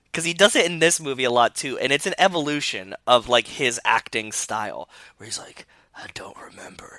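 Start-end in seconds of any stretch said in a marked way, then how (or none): 5.9-7.0 put-on grunting delivery, quieter. Mocking an actor's serious-line delivery: grunting Vin Diesel impression. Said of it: "grunts it".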